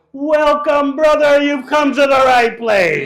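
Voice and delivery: booming, very loud, high-pitched call. Retelling the temple's official greeter welcoming you at the door, in a loud voice. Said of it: "said with a loud voice".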